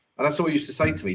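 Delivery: ordinary talk, nothing marked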